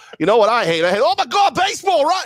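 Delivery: put-on very high, loud, botched Boston accent drifting into Australian. Imitating fans reacting to a home run: bad boston accent. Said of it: "that Boston accent came off Australian".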